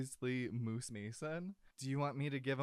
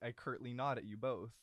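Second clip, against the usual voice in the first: plain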